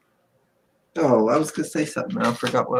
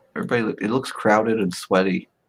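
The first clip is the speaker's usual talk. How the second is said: plain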